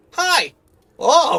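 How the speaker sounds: very high, very loud, intimidated gnome voice. Narrating a tavern scene, the storyteller voices a very short gnome barkeep: intimidated gnome woman. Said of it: "very intimidated by your presence".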